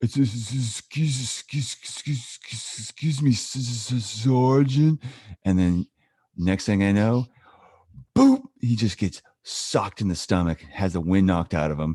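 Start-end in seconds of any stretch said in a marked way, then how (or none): 0.0-5.0 very slow, high, dopey heavy stammer. Retelling how Dryer spoke to the sergeant before getting socked, in Dryer's big stuttering, stupid voice. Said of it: "Dryer had this like big stuttering, like stupid voice".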